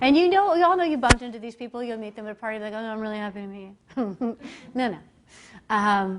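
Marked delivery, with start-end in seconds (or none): 2.7-4.4 put-on unhappy joyless tone, much quieter. Mimicking people who claim they're happy to meet you, imitating unhappy-sounding greeting. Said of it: "you need to actually sound happy".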